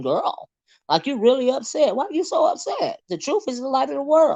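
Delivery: very high-pitched, put-on corny voice. Retelling own reaction to an upset video, in a corny voice. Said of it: "in my corny voice".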